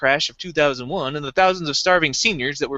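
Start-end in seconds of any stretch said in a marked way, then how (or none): none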